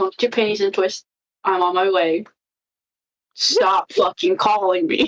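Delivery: rough, grumpy, dismissive gruff tone. Voicing Madam answering a sending message: gruff response. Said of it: "A very gruff response".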